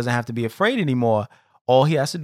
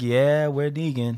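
put-on resigned voice, slower. Recapping an episode's ending, imitating Dwight, over it. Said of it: "He's over it".

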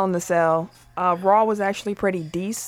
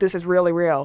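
ordinary talk, nothing marked

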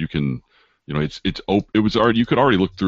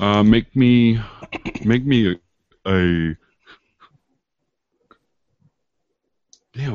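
very slow, yawn-stretched words; 7 semitones higher, 3 dB louder than usual. Asking a player for a climb roll, yawning while talking. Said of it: "I'm yawning like mad".

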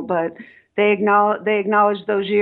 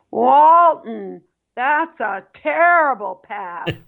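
put-on angry sports commentator voice, higher; 4 semitones higher than usual. Retelling a commentator ripping a player on air: Bill Walton voice. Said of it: "you have to picture Bill Walton's voice".

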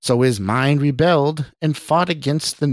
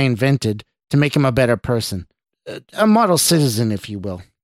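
plain reading voice

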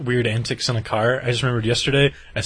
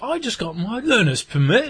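put-on botched Yorkshire girl accent, very high pitched; 10 semitones higher than usual. Describing a girl from Yorkshire met over the internet, imitating Zara's Yorkshire accent. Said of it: "I'm not going to try to do that accent".

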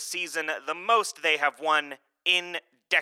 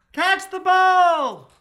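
shrill, very high holler, ball drawn out; 8 dB louder than usual. Calling from the outfield to the catcher during warm-up: yelling. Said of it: "Finnick yells from the outfield".

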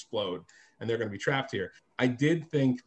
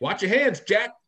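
put-on raised, high, old-school jive slang delivery; 8 semitones higher, 6 dB louder than usual. Retelling what a grandfather would always say: imitating grandfather's jive talk. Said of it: "almost exclusively jive".

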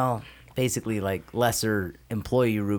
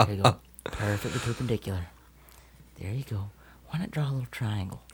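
soothing put-on painter voice; 4 dB quieter than usual. Calming an upset engineer about drawing lines: Bob Ross voice. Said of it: "You do a great Bob Ross".

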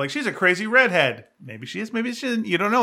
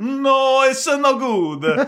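put-on Cuban accent, raised and high; 7 semitones higher, 5 dB louder than usual. Retelling a scene from a story, the speaker voices one character's reply: Cuban accent. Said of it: "that's my Cuban accent".

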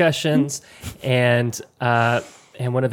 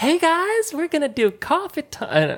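mimicked voice, pitched much higher.

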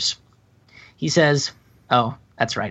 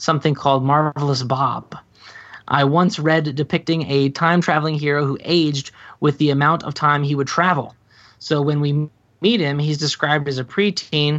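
normal talking voice

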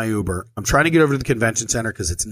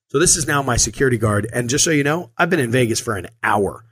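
ordinary talk, nothing marked

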